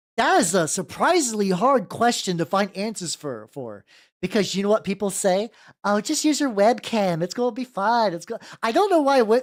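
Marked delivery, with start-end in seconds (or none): 5.9-8.2 put-on condescending old southern woman voice. Mimicking what people say about streaming cameras: mock-condescending old southern woman voice. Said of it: "condescending like southern old woman".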